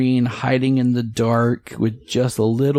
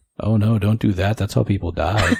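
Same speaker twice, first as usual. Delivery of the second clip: fretful, dismayed grumbling, muttered to himself; 2 semitones lower than usual. Retelling what a younger guy behind them said: imitating someone muttering under his breath. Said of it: "under his breath, muttered".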